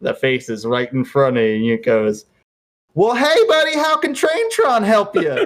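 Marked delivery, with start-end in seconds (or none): 2.9-5.5 very high, bright, cheery, chirpy train character voice. Describing a scene where a train's face greets the players, in a smiling Traintron voice. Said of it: "with a big ol' smile".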